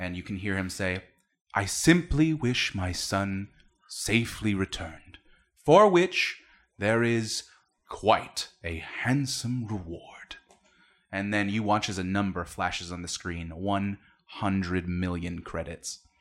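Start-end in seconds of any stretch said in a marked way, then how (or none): 1.5-10.4 grand, slow, booming voice with an echoing quality. Voicing a father speaking out to the town: booming voice. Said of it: "is booming throughout the town".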